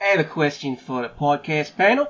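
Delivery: put-on Australian accent, a best attempt. Reading a listener's question to the podcast panel in an aussie accent. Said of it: "in my best Aussie accent".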